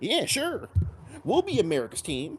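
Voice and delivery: goofy, high-pitched clown voice. Retelling how the Cowboys president agreed to be America's team; goofy clown voice as Tex Schramm. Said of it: "make him sound like a fucking clown".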